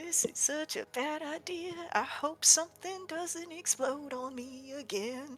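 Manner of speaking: muttering under breath. Character hopping across rocks, muttering to himself. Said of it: "he just kind of mutters to himself".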